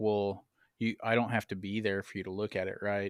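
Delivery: plain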